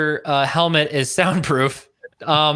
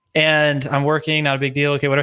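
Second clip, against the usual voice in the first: ordinary talk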